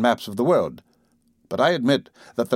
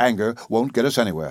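ordinary delivery

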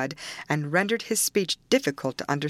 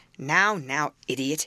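ordinary delivery

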